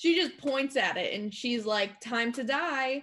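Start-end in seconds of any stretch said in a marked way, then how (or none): 2.0-3.0 put-on British accent. Voicing a character who points at a monster: British accent. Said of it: "Except British".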